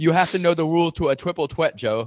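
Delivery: loud, high, failed fake Irish accent. Quoting how a woman delivers a line, in a bad irish accent. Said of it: "That's not an Irish accent".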